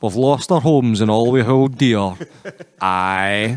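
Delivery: put-on grim, slow, dour Scottish accent, "aye" drawn out. Speaker retelling a scene where parents lose their flooded village, imitating dour Scottish parents. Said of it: "just dour as fuck".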